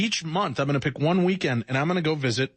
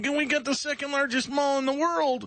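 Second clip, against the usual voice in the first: much higher, mocking, eager, boastful voice. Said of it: "some of these people".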